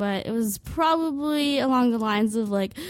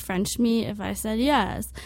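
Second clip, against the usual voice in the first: normal talking voice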